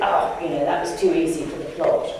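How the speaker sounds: ordinary delivery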